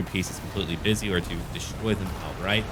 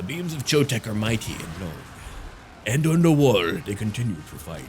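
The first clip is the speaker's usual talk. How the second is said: grand, theatrical narrator voice with swooping pitch; 2 semitones higher, 4 dB louder than usual. Speaker narrates the fight on the wall as it continues: dramatic narrator voice. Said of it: "That'll be my new narrator voice".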